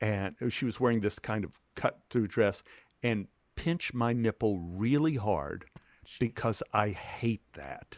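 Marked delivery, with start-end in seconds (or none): 3.0-8.0 whisper, lower and quieter. Retelling what a co-star said during a scene: imitating a whisper. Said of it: "she whispers to me".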